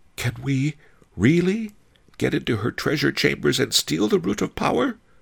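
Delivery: very high, small, frightened voice. The narrator asks Master Li a question, in a tiny, frightened voice. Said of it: "I asked in a tiny, frightened voice".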